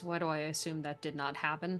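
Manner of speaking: muttered under the breath. Retelling what a woman muttered in response to the uncle's story, under her breath. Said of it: "under her breath".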